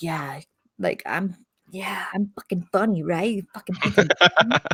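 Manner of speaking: mocking put-on voice. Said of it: "he's like".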